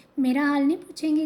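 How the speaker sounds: ordinary delivery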